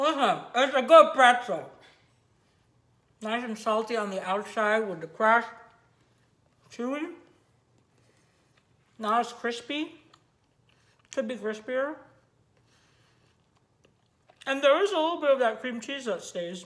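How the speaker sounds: talking with mouth full. Tasting a pretzel and reviewing it for viewers, talking with mouth full. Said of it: "Why am I talking with my mouth full?".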